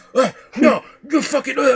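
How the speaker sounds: acted angry shouting. Retelling how a debate opponent got mad and yelled: imitating Little Peep yelling angrily. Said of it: "he would get mad and would start yelling".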